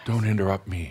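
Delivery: quiet, soft voice. Showing how theatrics can be subtle, saying a warning: quiet voice. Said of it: "a quiet voice that says".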